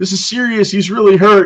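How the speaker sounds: high, loud, urgent and insistent.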